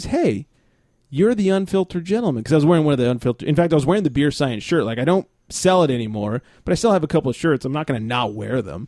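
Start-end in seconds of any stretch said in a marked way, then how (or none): 0.0-2.4 mock smugly proud, pitched-up call-out. Retelling a man who walked up while he poured beer, mock-smug and proud. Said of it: "smugly and proudly says".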